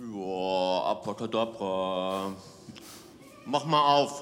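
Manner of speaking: very low, slow, drawn-out, listless, no energy. Mimicking how the audience says the magic phrase, lacking energy. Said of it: "ihr macht so ein bisschen mehr so, ... Da fehlt einfach so ein bisschen Energie".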